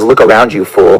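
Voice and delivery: put-on demon voice. Retelling a visit where a demon speaks through a man: imitating a demon speaking. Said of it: "And he goes".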